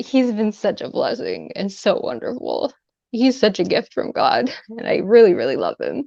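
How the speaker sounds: choked-up voice, on the verge of tears. A wife speaks of her thankfulness for her husband, about to cry. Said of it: "oh my gosh, I'm gonna cry".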